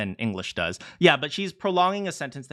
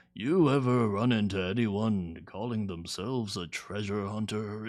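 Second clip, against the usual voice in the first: put-on low, soft old man voice; 4 semitones lower, 5 dB quieter than usual. Critiquing a line's delivery, imagining it spoken by an old man: old man voice. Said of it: "I can imagine like an old man".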